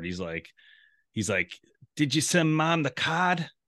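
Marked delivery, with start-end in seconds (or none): 2.0-3.5 put-on heavy Boston accent, much higher pitch. Retelling a man walking with his dad, imitating his heavy boston accent. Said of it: "It definitely was a Boston accent".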